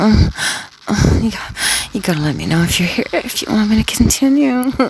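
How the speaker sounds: high, put-on horny, seductive, sultry delivery. Retelling what the speaker said to the audience while pretending, in a mock-horny soft voice. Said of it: "I said in a real horny, soft voice".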